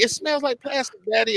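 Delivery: put-on child voice. Acting out a child who complains to the father: imitating a child. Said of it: "And they be like".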